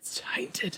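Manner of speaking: unvoiced, slow whisper. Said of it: "every mom is whispering that".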